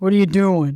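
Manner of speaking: mock big low voice. Retelling a phone call from a booker, imitating a big low voice. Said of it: "this big low voice".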